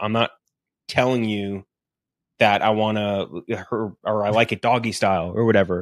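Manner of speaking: ordinary delivery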